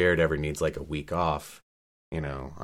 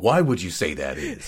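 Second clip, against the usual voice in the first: pitch swinging from way up to way down; 5 dB louder than usual. Talking about a voice they loved, the speaker slips into the Mr. Meatless voice. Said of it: "Sorry, I just did Mr. Meatless".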